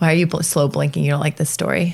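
normal talking voice

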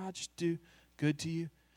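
flat, toneless, dull, lifeless monotone. Showing how doing good is not meant to sound: flat monotone. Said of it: "not just to do that kind of in a monotone".

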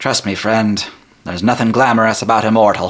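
fake, improvised Irish-Scottish accent. Narrator voices Marcus standing behind the listener's chair: put-on Irish or Scottish accent. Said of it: "I'm not Irish or Scottish, I just decided to put that on".

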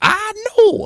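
very high, showy, borrowed TV personality voice. Showing the others an impression of the catchphrase: Craig Ferguson impression. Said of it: "my impression of Craig Ferguson just by hearing me go".

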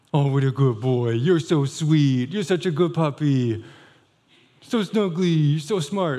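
silly, ridiculous gushing praise voice. Showing how dog owners praise their dog, ridiculous voice praising a dog. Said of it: "It's a ridiculous voice".

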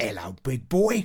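put-on London accent, casual. Retelling a guy they walked past, imitating his london accent. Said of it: "in kind of like a London kind of accent".

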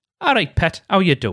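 Northeast English dialect voice. Explaining a term of endearment, demonstrating a greeting, in a Northeast England accent. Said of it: "something that people from the Northeast might say".

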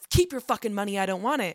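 put-on angry outburst voice. Retelling a film character's outburst about money: imitating an angry outburst. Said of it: "he gets angry".

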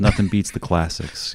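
mock mumbling, muttered under the breath. Describing a man at the handprints, a speaker quotes him, imitating a mumble. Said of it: "he just mumbles to himself".

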